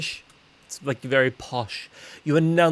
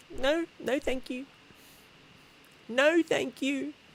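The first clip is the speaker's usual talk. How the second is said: put-on very high, soft, tiny, polite little-kid voice; 13 semitones higher, 5 dB quieter than usual. Retelling what a little niece says: imitating niece Amelia. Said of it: "She's like".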